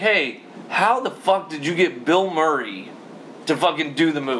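ordinary delivery

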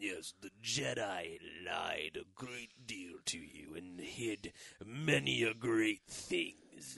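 dead-on dark lord voice, voice dropped very low, deep. Retelling a scene, speaking as Sidious to Vader: Darth Sidious impression. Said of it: "your Sidious was pretty dead on".

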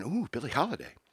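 soft murmuring of several voices together. Retelling a rant, the speaker voices the french people reacting, imitating a crowd murmuring. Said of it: "the French people they start murmuring".

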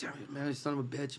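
put-on angry grumbling. Retelling being sent back out for forgotten salsa: retelling own angry grumbling. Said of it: "I'm getting pissed".

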